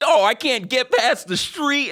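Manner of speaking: put-on New York accent, pitched very high. Speaker retelling a dubbed voice heard on autoplay, put-on New York accent. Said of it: "doing it in like a New York accent".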